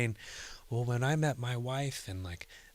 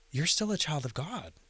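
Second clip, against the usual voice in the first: mock surprised tone, higher; 3 semitones higher than usual. Retelling what a grandfatherly friend said on hearing the news: imitating a surprised tone. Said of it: "he said it, like, so, like, surprised".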